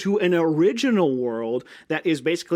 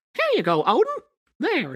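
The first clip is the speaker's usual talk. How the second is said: very high, swooping cartoon squeak, way up; 11 semitones higher than usual. Acting out what someone would say to Odin, in a Mickey Mouse voice. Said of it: "I will do my Mickey Mouse impression".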